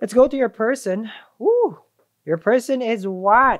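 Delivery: very slow, loud, drawn-out, swooping sing-song yell. Doing a tarot reading and moving on to the person: yelling. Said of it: "I don't know why I'm yelling".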